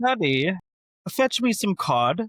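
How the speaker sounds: high put-on British accent, lady-of-the-house style. Imitating fifteen-year-old Sophie asking Daddy: Sophie's put-on British accent. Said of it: "She's got a British accent".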